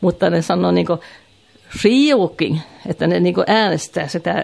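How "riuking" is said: Riuking with stress on the first syllable Riu. Showing how Värmland dialect speakers say Riuking, with stress on Riu. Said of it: "ensimmäisen äänten ne painostaa".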